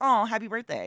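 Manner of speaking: high, mock sympathetic, pity-laden "aw". Imitating people who wish a happy birthday out of pity: imitating a pitying birthday wish. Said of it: "it's like a pity happy bir-".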